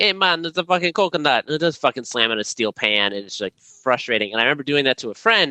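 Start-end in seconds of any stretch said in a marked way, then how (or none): 0.0-1.4 over-the-top Jamaican accent. Showing the others a joke voice: exaggerated Jamaican accent. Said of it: "a racist Jamaican accent".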